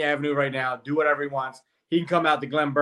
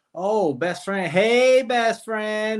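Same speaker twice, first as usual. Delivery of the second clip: put-on very slow, high, drawn-out, playful teasing tone; 7 semitones higher than usual. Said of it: "she'd be like".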